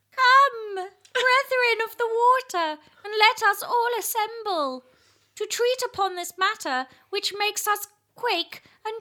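very high, slithery, slippery eel character voice. Asked to pretend to be an eel while reading a verse aloud: pretending to be an eel. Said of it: "Pretend to be an eel".

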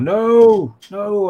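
high, loud, horrified, dismayed no.

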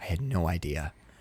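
low, soft, horrified voice. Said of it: "He's horrified".

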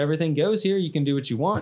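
ordinary delivery

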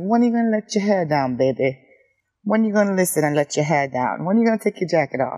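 attempted, put-on Swedish accent with coaxing lilt. Retelling a guy who always confronts them about their hair, the speaker attempts his Swedish accent. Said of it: "got this accent that I'm trying to fucking imitate".

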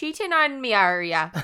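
put-on Irish accent. On a podcast, repeating a co-host's line in an attempted irish accent. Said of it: "I went totally Irish when I said that".

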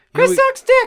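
very high-pitched, squeaky, helium-like squeal. Taking turns doing helium voices, now doing their own: squeaky helium voice. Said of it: "Now I'll do mine".

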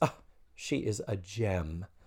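very slow, very drawn out, oblivious upper-class delivery. Retelling a scene, quoting a character: clueless privileged Blair voice. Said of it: "in the most perfectly clueless, privileged Blair kind of way".

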